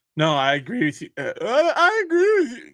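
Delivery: very high voice cracking, breaking mid-word. On air, agreeing with a co-host, voice cracking. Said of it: "did you hit puberty, [name], all of a sudden right here on the air?".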